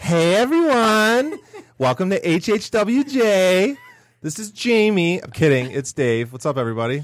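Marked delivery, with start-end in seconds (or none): 0.0-5.2 put-on voice, very high, very slow, drawn out. Opening the show as a joke: Jamie impression. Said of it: "my best Jamie impression".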